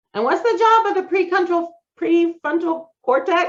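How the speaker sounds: rattled-off, rushed, very high-pitched. Quizzing an audience about the brain, talking too fast. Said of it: "I'm talking too fast".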